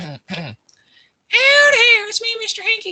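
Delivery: very high, loud, squeaky cartoon voice.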